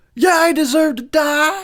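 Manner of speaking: voice pushed way up high. Trying the impression again, sounding instead like Gomer Pyle. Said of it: "It was more like Gomer Pyle".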